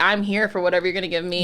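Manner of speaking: ordinary talk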